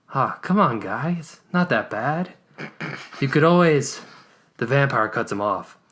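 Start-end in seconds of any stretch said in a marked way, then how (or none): 0.1-4.0 sympathetic, consoling, sounding sorry. Reading a story aloud, the vampire hunter answers the vampire: sympathetic voice. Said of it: "replies in a sympathetic voice".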